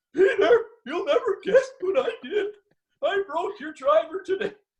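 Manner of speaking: mock bawling, very high, sobbing through words. Retelling the phone call to Pete, retelling bawling on the phone. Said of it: "I'm literally bawling".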